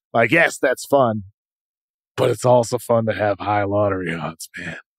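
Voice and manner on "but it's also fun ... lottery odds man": put-on, low, bothersome droning voice. Joking with another speaker about a team's chances: low, bothersome voice. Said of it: "your voice got really low and bothersome there just now".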